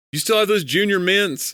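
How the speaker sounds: play-acted blaring, very high voice, no indoor volume. Imitating a brother with no inside voice in a cinema: imitating brother's loud voice. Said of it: "he doesn't have an inside voice".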